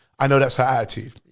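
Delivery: ordinary talk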